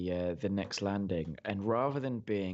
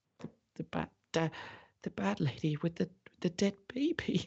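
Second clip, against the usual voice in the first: put-on very high, scared little boy voice; 10 semitones higher than usual. Voicing a little boy who taps a player's shoulder: little boy voice. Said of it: "somehow the little boy is next to you again".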